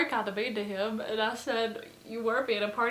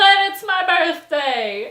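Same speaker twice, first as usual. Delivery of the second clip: put-on insistent repeated shouting, louder each time; 7 semitones higher, 13 dB louder than usual. Retelling how a man kept repeating himself to a woman, retelling someone getting louder. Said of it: "he just kept saying this and getting louder".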